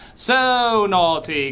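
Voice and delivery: offhand, uncaring delivery. Redoing the councilwoman's line, imitating a councilwoman who doesn't care. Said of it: "In that line while getting her nails done".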